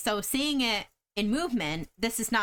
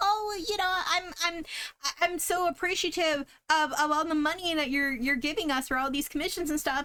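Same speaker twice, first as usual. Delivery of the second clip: mock-sweet cute voice, higher; 8 semitones higher than usual. Mocking how sellers of commissions talk to clients, in a mock-sweet voice. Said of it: "the cute wording that they're trying to be like".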